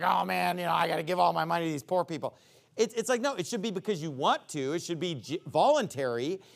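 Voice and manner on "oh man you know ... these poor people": quick, reluctant, complaining tone. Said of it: "not grudgingly, like".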